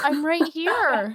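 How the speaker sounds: startled, confused, panicked younger-sounding voice.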